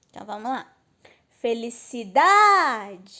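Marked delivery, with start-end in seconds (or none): 1.4-2.9 felicidade called out, with stress on da. Finding the stressed syllable by calling the word, felicidade with stress on da. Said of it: "ó o da".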